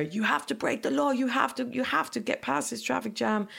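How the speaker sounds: high-pitched, frantic, urgent, pleading yell. Recalling being stuck in traffic on the way to hospital, retelling shouting at the driver. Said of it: "I was shouting at the driver".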